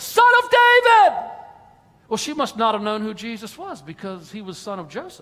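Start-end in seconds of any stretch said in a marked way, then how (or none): 0.0-1.4 very high call at the top of the voice. Telling a bible story of a woman running and calling out, acting out a loud shout. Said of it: "shouting at the top of her voice".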